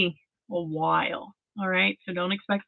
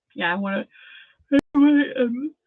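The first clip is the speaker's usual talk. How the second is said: talking through a yawn; 4 semitones higher, 5 dB louder than usual. Speaking to the listener mid-conversation, yawning. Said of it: "I'm yawning trying to get to you".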